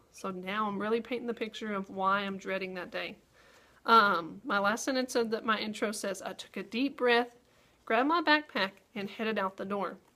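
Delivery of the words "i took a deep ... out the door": pauses after the words "breath" and "backpack". Reading the last sentence of their intro aloud, pauses after breath and backpack. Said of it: "I heard my voice pause there a few times".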